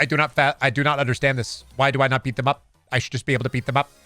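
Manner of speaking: flat, monotone, dead-level accountant voice. Mocking a movie character's speech: Ben Affleck accountant voice. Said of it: "I love the Affleck accountant voice".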